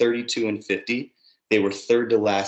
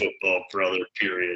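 deep put-on voice; 2 semitones lower than usual. Imitating a man's voice while chatting with co-hosts, deep put-on voice. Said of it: "That deep".

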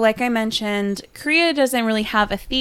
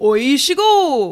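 rhythmic call intonation, higher pitch; 4 semitones higher, 4 dB louder than usual. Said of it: "you have to say it in this intonation".

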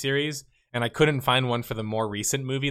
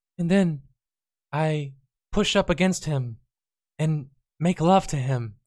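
put-on older male voice faking a girl's voice; 3 semitones higher than usual. Imagining an old man reading a story on cassette, old man faking a girl's voice. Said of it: "the guy would pretend to be the girl too".

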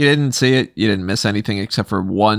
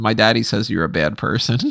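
normal talking voice

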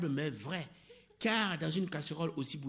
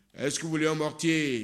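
big, booming elephant voice; 6 dB louder than usual. Reading a fable, the elephant asks all its friends, in a big voice. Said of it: "de sa grosse voix".

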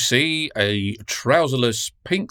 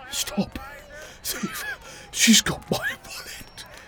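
put-on out-of-breath, wheezy, breathy, blustering drill sergeant voice; 6 dB quieter than usual. Narrator voicing a trouserless drill sergeant chasing a thief, wheezing and blustering. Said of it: "Once he'd caught up, the drill sergeant, pink-thighed and wheezing like an old set of church organ bellows, ... pink-thighed and wheezing like an old set of church organ bellows".

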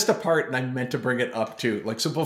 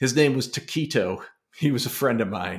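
plain

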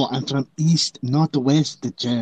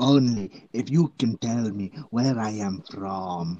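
fake put-on Eastern European accent; 3 semitones lower, 4 dB quieter than usual. On a podcast, after vowing to keep a new voice, challenging the other host: put-on foreign accent. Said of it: "I'm going to do the rest of the podcast in this voice".

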